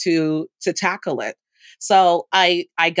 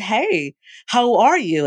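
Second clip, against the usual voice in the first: mock very chipper, cheery, slow and sing-song; 4 semitones higher than usual. Retelling greeting a woman who came in silently, to break the awkward silence, retelling own chipper greeting. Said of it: "I said it like in a very chipper way".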